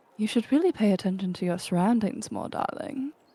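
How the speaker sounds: whispered voice. Voicing a character holding a gun to someone's back: whispering in his ear. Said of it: "whispers in his ear".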